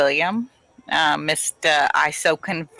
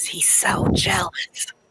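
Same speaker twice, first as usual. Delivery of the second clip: hushed, confiding whisper; 3 dB quieter than usual. As a third character returns, she scoots closer to the captain and whispers. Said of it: "she kind of whispers".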